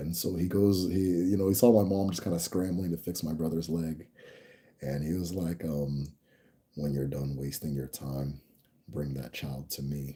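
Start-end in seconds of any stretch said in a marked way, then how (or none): 6.8-10.2 very deep, hushed, commanding and dismissive voice. Quoting a man who used to talk this way: very deep, slow voice. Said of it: "he used to talk like this, very deep voice, very slow".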